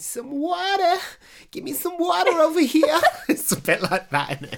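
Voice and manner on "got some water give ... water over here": put-on Boston accent, very high-pitched. Talking about accents, the speaker demonstrates a Boston accent. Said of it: "It's more like".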